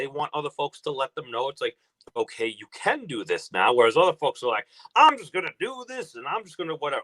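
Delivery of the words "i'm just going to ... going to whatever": bad, careless put-on Southern accent, pitched up. Quoting how other folks talk, in a bad southern accent. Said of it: "I was going into my, a bad Southern accent".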